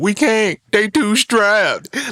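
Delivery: very high pitched, slow, drawn-out voice. Retelling how a friend quoted Malibu's Most Wanted: Malibu's Most Wanted quote voice. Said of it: "he would use that voice whenever he would say that shit".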